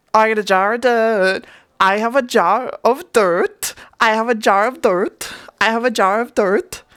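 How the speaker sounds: pirate character voice with a Dutch accent. Trying to combine a Dutch accent with a Jack Sparrow voice; Dutch-accented Jack Sparrow. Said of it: "how do I combine them".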